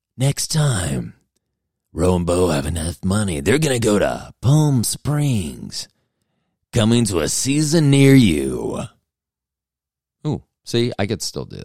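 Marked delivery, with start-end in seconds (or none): 0.2-8.8 dramatic coming-soon movie trailer announcer voice. Showing he can still do his old movie trailer announcer voice. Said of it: "I could use that voice".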